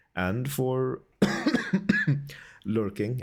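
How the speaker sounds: slow "lurking" in a Swedish accent.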